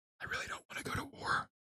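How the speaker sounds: imitated politician-style whisper. Mocking a politician's silent protest to his wife: imitating JD Vance whispering. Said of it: "he's whispering it into his".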